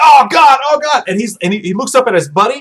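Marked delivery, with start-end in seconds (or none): 0.0-1.0 agonized, wounded screaming, high pitched and drawn out. Retelling a scene where a wounded man's guts are glued: imitating someone screaming. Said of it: "He's screaming".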